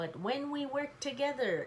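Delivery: ordinary delivery, nothing marked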